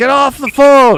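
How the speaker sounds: very loud, shrill, high-pitched yelling. Imagining how the dad would yell when calling in: imitating a dad yelling. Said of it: "and then he would be like".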